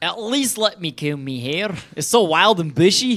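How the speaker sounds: well-done put-on Scottish accent, fully committed. Prompted by another speaker to show off an accent; Scottish accent. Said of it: "Viv's got a great Scottish accent".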